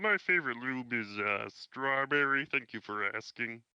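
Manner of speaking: put-on cartoon frog puppet voice. Saying they can't do voices, then trying one: Kermit the Frog voice. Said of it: "I could do Kermit the Frog".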